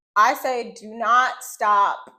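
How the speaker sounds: loud, yelled delivery. Speaker giving listeners a travel tip, yelling. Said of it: "And I'm yelling this".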